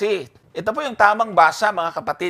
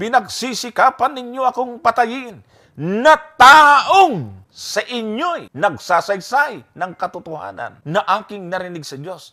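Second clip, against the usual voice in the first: heavy stress on the word taong; 3 semitones higher, 3 dB louder than usual. Reading a verse to show the fallacy of accent: stress on taong. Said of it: "nasaan yung accent? Taong!".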